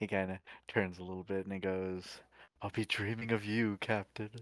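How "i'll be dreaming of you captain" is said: playful, theatrical, dramatic delivery. Narrating a roleplay, a character turns and bids the captain goodnight, playful, dramatic voice. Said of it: "in a very playful, dramatic voice".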